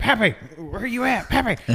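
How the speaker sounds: mock very high-pitched calling scream. Retelling searching an airport bathroom for Pappy: retelling own scream. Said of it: "I'm screaming".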